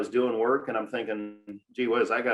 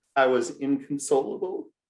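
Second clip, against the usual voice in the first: ordinary delivery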